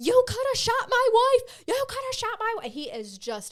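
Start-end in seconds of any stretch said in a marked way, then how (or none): 0.0-2.7 very high, shrill, very loud, all-out screaming. Retelling how a man screamed over the horn at a negotiator, imitating someone screaming. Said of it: "And he's screaming".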